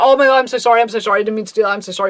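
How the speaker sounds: fast, panicked, frantic, gushing babble. Retelling how a friend babbled apologies: imitating someone babbling apologies. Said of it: "He was just babbling apologies".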